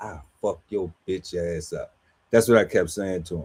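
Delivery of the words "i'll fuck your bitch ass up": whisper, lower and quieter. Retelling a confrontation, repeating own past threat: imitating own past whisper. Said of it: "and I was whispering".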